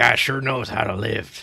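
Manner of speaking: put-on southern drawl accent. Speaking in character about a sleeping man, in a Southern accent. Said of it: "I don't know why it sounds southern".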